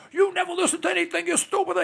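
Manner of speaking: put-on high, angry, scolding-toned Italian accent. Retelling what the speaker's father used to say when angry, Victor's Italian accent. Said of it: "in his Italian accent".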